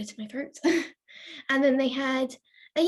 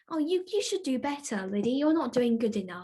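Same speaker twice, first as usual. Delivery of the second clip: mock-caring sympathy on top, uncaring and mean underneath. Retelling what was said to the speaker about low scores, imitating a fake-sympathetic mean voice. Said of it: "In that sympathy, not really caring, mean voice".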